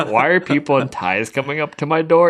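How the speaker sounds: furious loud shouting. Retelling a pissed brother-in-law finding people at his house: imitating a pissed brother-in-law. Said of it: "My brother-in-law was pissed".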